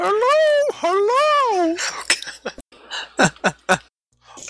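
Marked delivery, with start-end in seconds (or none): 0.0-1.8 very high, calling town crier voice. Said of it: "Guild Crier enters".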